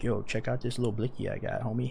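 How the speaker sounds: put-on soft, boastful little punk gangster kid, Jersey accent. Mocking a punk gangster kid from New Jersey with a fake gun: imitating a punk New Jersey gangster kid. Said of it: "some little punk gangster kid from New Jersey".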